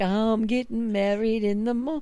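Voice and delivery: struggling, fumbled bad Cockney accent. Given My Fair Lady as a clue for the accent: attempted My Fair Lady Cockney accent. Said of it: "That's what I was trying to do".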